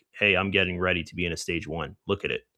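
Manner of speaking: normal talking voice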